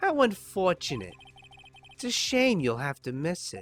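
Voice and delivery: put-on New Jersey accent creeping in. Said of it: "It definitely just morphed into Jersey".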